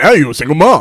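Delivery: put-on harsh, blunt manner of speaking. Mimicking a friend's way of saying a line, imitating a harsh remark. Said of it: "the way you say it".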